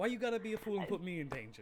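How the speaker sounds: playful teasing tone. Voicing a character complaining in a joking tone. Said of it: "in the last bit of their joking tone".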